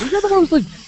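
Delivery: very high, loud, exasperated voice. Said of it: "I'm like".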